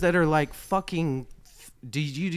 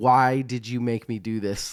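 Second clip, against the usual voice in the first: ordinary delivery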